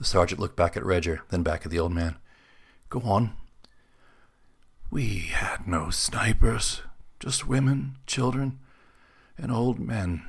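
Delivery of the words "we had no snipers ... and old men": very slow, rough, dry, leathery half-whisper. An old man tells the sergeant what happened, in a leathery half-whisper. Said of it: "His voice a leathery whisper".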